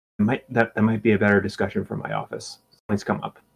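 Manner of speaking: low, discreet voice. Voicing a team principal raising a private matter: lowered voice. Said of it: "he lowers his voice".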